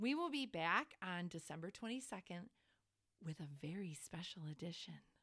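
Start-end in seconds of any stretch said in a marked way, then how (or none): 1.0-4.9 hammed-up, low, put-on special voice. Host announcing the next episode to listeners, in a special voice. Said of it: "i said that in like a special voice".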